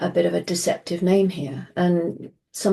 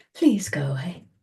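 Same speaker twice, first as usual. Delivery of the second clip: formal British English accent; 3 dB quieter than usual. Describing how people politely say go away, the speaker demonstrates: polite BBC voice. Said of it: "So that's my BBC voice".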